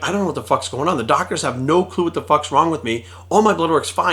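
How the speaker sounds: normal talking voice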